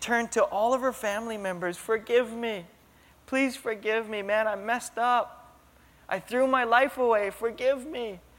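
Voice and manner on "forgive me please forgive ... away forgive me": mock-tearful pleading with put-on crying. Retelling a woman confessing to her family members: imitating someone crying, begging forgiveness. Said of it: "And then she started crying".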